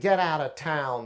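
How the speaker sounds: nasal, through the nose. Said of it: "in that nasally voice".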